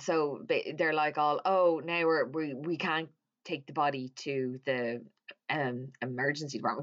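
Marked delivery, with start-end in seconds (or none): none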